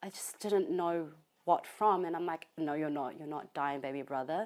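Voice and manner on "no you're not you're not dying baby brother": plain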